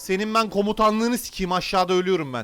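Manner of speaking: loud, high, furious outburst. Player talking to teammate Miller during a game, furious. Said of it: "Çok sinirime dokundu şu an".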